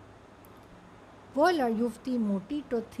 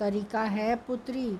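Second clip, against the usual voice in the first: plain reading voice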